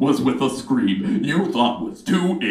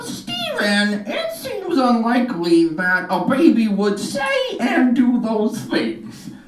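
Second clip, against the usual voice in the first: strange, very high, swooping sing-song voice; 11 semitones higher than usual. The speaker voices what audience members might say to him, weird put-on voice. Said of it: "That is a weird voice".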